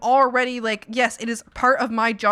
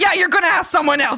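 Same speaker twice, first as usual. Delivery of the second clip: combative, raised, aggressive in-your-face retort; 6 semitones higher, 6 dB louder than usual. Retelling own answer to a manager at work: retelling an aggressive reply. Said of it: "I usually won't be that aggressive".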